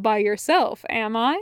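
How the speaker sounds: plain reading voice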